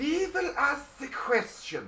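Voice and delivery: high, swoopy pitch, hissed.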